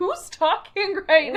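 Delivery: shocked, disbelieving outburst. Retelling an anime scene where a character looks shaken: imitating a shocked character. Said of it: "He looks shooketh".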